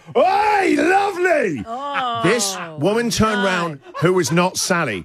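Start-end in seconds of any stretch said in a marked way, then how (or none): 0.2-1.7 very high, loud, carrying yell. Retelling calling out of a car window to a woman: retelling a yell. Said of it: "I yelled out".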